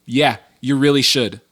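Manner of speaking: imitated angry voice. Retelling own reply to someone about sharing the podcast, angry reply. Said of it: "don't say it angrily".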